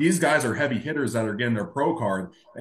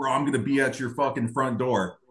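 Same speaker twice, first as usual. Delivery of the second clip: put-on angry man voice, threatening tone. Retelling a neighbor's threat: imitating an angry man. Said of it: "he was all pissed off at me".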